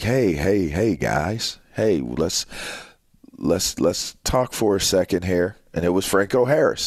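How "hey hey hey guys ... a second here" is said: mellow, understated fake voice. Retelling how a legend stopped a pickup game: Franco Harris smooth low-key voice. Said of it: "here comes this smooth, low-key voice like".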